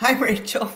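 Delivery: talking through laughter. Greeting rachel at the start of the episode, laughing while talking. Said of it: "I'm laughing at myself".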